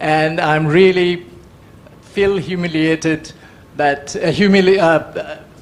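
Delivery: flustered, nervous, halting, tripping over words. Speaking about a book in front of a renowned expert, nervous, stumbling. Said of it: "I'm getting nervous".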